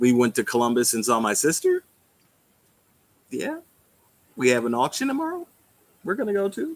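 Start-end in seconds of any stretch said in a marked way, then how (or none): 1.2-6.8 high-pitched, excited, sing-song voice. Chatting with Roy about recent family news, high excited voice. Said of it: "why is your voice getting so high?".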